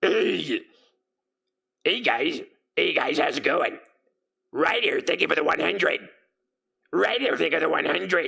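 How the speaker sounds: gritty, creaky, distorted goblin-like rasp. Showing a voice they used to do: rough, distorted goblin voice. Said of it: "I used to do this voice".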